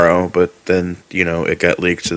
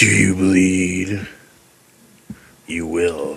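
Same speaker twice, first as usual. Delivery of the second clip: put-on robotic superhero voice; 4 dB quieter than usual. Repeating what he says in the scene; Batman voice. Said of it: "Batman voice?".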